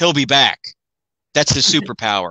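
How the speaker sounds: put-on dry, low, deadpan delivery. Recapping an episode, quoting May's line after the explosion, mimicking May's deadpan. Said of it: "she was just so deadpan".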